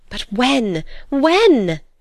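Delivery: high-pitched impatient cry. Narrator reads a character pressing the other speaker, crying out impatiently. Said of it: "Edna cried impatiently".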